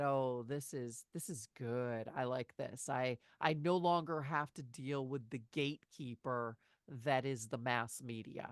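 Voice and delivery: ordinary talk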